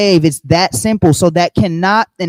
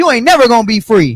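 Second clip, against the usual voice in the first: put-on voice, pitched higher; 4 semitones higher than usual.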